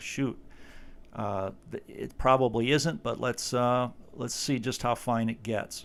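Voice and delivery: ordinary talk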